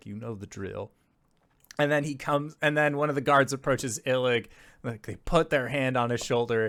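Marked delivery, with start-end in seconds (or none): 0.1-0.9 very quiet, barely audible half-whisper. Game narrator voicing a character handing the party to his comrade: half-whispering very quietly. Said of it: "he whispers very quietly to them".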